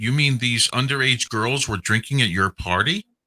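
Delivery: ordinary delivery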